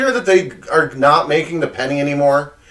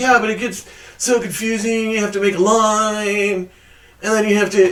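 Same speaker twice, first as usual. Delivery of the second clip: making-fun put-on teasing voice, drawn out; 6 semitones higher than usual. Retelling what Producer Man says about scratch-offs: mocking impression of Producer Man. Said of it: "I don't know why I'm making his voice like that".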